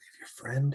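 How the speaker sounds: very quiet, hushed, secretive whisper. Speaking in character to Landis: whispering in character. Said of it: "I whisper".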